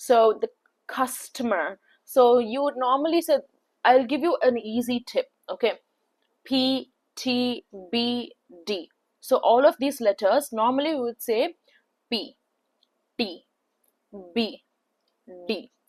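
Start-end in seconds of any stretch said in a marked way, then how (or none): 12.1-15.7 very slow Indian accent with hard consonants. A trainer demonstrating how letters are usually said, with a hard Indian accent. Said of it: "saying it with a hard accent".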